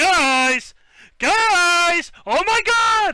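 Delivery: very high, very loud, slow, drawn-out shrill shout. Retelling how loud Matt screams in person: imitating Matt yelling. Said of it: "he yells".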